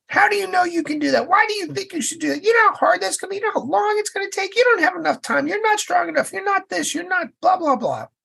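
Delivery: very high, nagging whine, rattled off fast. Speaker describing the inner voices everyone has, voicing the first: whiny inner voice. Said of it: "The first voice is the whiner".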